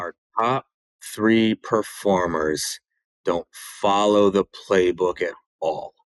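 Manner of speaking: very slow delivery. Retelling a client repeating their complaint when asked: saying it really slow. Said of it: "say that to me one more time, but really slow".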